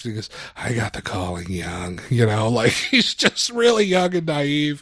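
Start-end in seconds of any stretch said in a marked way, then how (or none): 0.6-2.0 put-on very low, soft, deep California stoner voice. Telling a joke, voicing the young priest answering a man: soft california stoner voice. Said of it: "a soft, kind of a California stoner voice".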